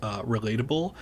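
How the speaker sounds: ordinary talk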